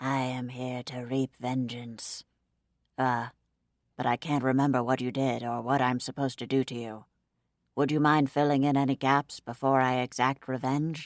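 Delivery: pretend deep demon voice. Clara mocking the idea of a senile vengeance demon, put-on deep voice. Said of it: "used a deep voice".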